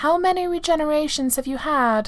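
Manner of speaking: suspicious, wary tone. A woman questions the only other of her kind she knows, suspicious demand. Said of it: "she demanded suspiciously".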